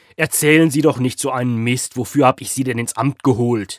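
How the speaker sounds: furious raging rant, very loud and booming. Hüschen, on the phone, berating Gscheitermer, raging. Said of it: "wütete Hüschen am Apparat weiter".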